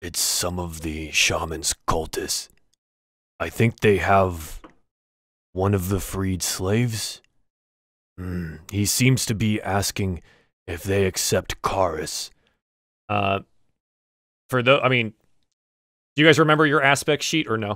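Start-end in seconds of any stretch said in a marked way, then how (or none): 0.0-12.3 slow, hushed, murmured under the breath. Voicing a companion who answers the party quietly: hushed tone. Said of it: "in a hushed tone".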